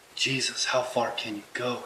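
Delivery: quiet whispering. Reading a novel aloud, voicing the male character: whispering. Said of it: "he whispers".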